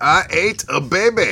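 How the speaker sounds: put-on fat Scottish character voice. After a terrible Shrek impression from someone else, show the alternative in a Fat Bastard voice. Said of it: "Just do a Fat Bastard instead".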